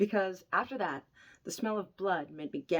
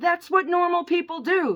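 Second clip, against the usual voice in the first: shrill, very loud, high-pitched yell at full volume; 11 semitones higher, 10 dB louder than usual. Retelling an argument with the speaker's husband, imitating someone yelling. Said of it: "And then he yelled".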